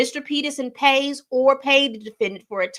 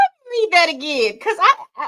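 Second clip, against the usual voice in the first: pitched-up speech bubbling through giggles; 5 semitones higher, 5 dB louder than usual. Stopping to reread a court filing aloud, giggling while talking. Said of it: "I'm giggling because I can't believe".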